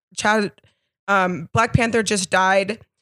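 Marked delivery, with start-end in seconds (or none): none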